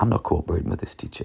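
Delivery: half-whispered, hushed, breathy, grudging, unwilling mumble. A teacher demonstrates the opposite of good projection: deliberately uncooperative delivery. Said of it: "a deliberately uncooperative voice or uncooperative delivery".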